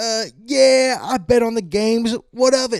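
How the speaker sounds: bad put-on New York accent, very high, drawn out. Joking about him coming up to the podium at a press conference, in a terrible new york accent. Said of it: "That was a terrible New York accent".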